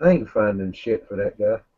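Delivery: calmest possible tone, quiet and flat. Playing a character telling the crew the news: slowest, calmest voice. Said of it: "slowest and most calmest voice that I can say".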